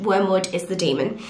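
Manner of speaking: usual speaking voice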